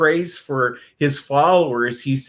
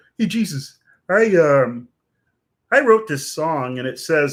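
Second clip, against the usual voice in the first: put-on puppet frog voice, higher. Telling a story of Jesus and Kermit talking, speaker does Kermit the Frog voice. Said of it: "so I won't do the voice anymore".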